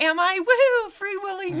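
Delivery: mock breezy, carefree tone. Retelling a film character's reply about being late: imitating a carefree, willy-nilly attitude. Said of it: "just much more willy-nilly about it".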